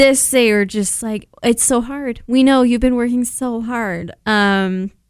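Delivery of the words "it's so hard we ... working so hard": ordinary talk, nothing marked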